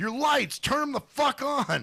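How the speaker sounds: mock very high-pitched, shrill, furious yelling. Retelling a man who got out of his van yelling at a woman, imitating him yelling. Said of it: "starts waving his arms and going".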